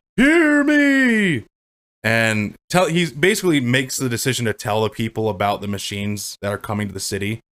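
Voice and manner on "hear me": high, loud, commanding shouted call. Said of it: "But he's like".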